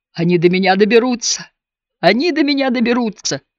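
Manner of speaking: groaning voice. Narrator reads Edam's line as the phone keeps beeping, moaning. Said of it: "Стонущим стоном Эдам простонал".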